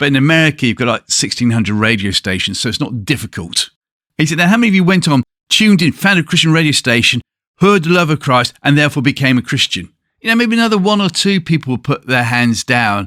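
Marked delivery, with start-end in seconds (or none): 4.4-9.9 brash, bold, measured, deliberate, pitched-up delivery. Retelling how a speaker addressed a huge crowd: imitating a loud, brash, deliberate speaker. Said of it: "He's very brash in the way he speaks, very deliberate".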